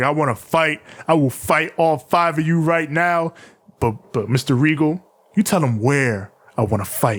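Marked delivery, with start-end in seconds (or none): none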